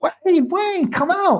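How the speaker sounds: acted, urgent, very high, drawn-out scream. Retelling how the lookout called out in the facility: imitating someone screaming. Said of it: "she's screaming, screaming, like, going".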